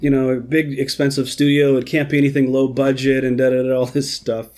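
ordinary talk

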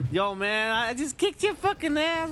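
mock-tough kid gamer voice. Mocking how 12-year-olds trash-talk online, imitating a 12-year-old gamer. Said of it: "I'm some 12-year-old".

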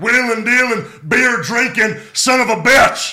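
very loud, high, belted-out yell. Cutting the jet flying promo for a fan's request: Stone Cold voice. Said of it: "Stone Cold doing the jet flying limousine riding promo".

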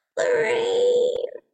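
put-on very high elderly woman voice. Retelling hearing a voice call from the bedroom; old granny voice. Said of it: "It was like an old granny voice".

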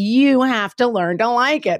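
slow, high, patronizing, condescending tone. Quoting what he told you, imitating a condescending tone. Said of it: "listening to him condescendingly be like".

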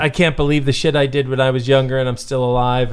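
ordinary talk

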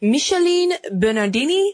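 terrible put-on French accent. Speaker telling the story of the bikini says the model's name, terrible French accent. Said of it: "That's my terrible French accent".

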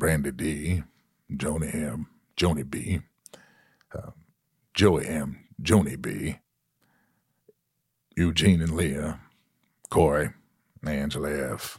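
measured, deep, slow, unhurried delivery. Reading out names in an impression: Morgan Freeman voice. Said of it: "that's a very good Morgan Freeman".

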